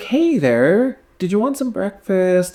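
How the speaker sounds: put-on very high, pitched-way-up child voice. Retelling how a character talks to a child: imitating Adriane talking to a child. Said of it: "the way she talks".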